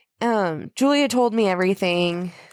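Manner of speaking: ordinary delivery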